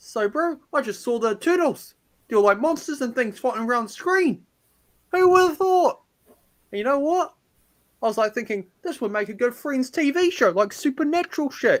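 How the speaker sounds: wild New Zealand accent. Giving a fake reaction to Eternals when asked, in a crazy New Zealand accent. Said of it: "like a crazy New Zealand accent?".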